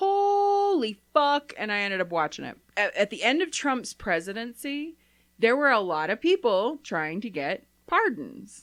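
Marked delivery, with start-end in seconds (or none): 0.0-1.5 stunned, drawn out high and slow. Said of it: "I was like".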